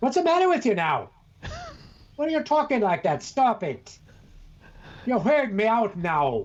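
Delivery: put-on scolding British accent. Retelling how his wife would tell him off, British accent. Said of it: "Your wife would adapt the British accent".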